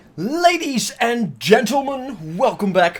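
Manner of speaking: high-pitched, breaking, cracking voice. Opening a video and welcoming viewers back, voice cracking. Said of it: "apparently my voice is cracking up".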